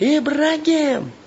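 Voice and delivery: very high pitched, loud bellowing yell. Telling a story, the general has just cursed out a guy and now summons his sergeant, yelling. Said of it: "И орет".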